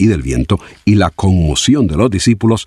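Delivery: plain reading voice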